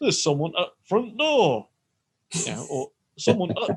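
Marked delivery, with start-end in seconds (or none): 0.0-1.7 put-on Yorkshire accent, "the" dropped before "front". Joking about the Google assistant announcing a visitor, in a Yorkshire accent. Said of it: "she doesn't say it in a Yorkshire accent".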